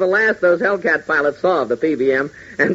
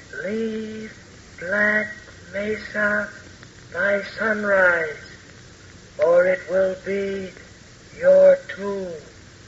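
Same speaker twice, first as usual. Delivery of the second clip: eerie, hushed, disembodied ghostly half-whisper; 3 semitones higher, 6 dB quieter than usual. In a drama, an unseen voice warns two characters, ghostly half-whisper. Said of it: "A ghostly voice out of nowhere, whispering death".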